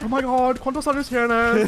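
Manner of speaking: very high, loud, shrieking put-on voice. Asked for it, speaking Spanish: James Charles voice in Spanish. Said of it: "speak Spanish in your James Charles voice".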